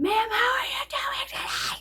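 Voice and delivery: mock very high, shrill, screamed male yell. Retelling what a man following her said to her: retelling a man's screaming. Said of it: "he's screaming at me and following me".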